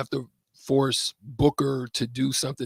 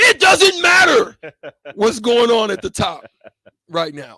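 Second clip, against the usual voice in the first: very loud, booming, animated bellow with swinging pitch; 9 semitones higher, 9 dB louder than usual. Breaking down the Western Conference standings, talking like The Rock. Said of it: "let me just talk like The Rock".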